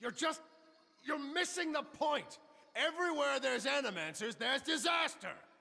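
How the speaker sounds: heated, high, loud shouting. Arguing against animancers before a gathering: yelling. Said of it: "Stop yelling".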